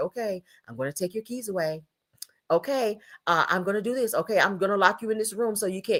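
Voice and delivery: put-on calm, soft-spoken, low-key voice. Mocking how nobody talks during a heated argument: mock calm low tone. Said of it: "you're not speaking in a very low tone".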